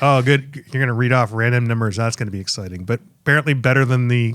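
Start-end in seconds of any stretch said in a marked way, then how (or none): none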